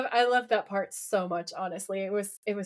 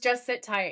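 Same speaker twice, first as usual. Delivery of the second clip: usual speaking voice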